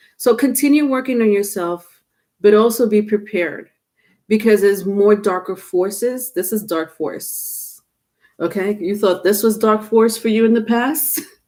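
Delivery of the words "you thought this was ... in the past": words broken up by laughter. Speaker asking listeners a question, laughing while talking. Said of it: "I'm laughing because I've been through it".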